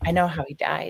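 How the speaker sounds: hushed, soft voice. Retelling what was said to dad on the way home: retelling own quiet words. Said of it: "And I very quietly said".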